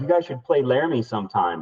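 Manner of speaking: sarcastic sing-song, swooping up and down in pitch. Retelling what band members said on the street: imitating a sarcastic remark. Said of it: "kind of being sarcastic".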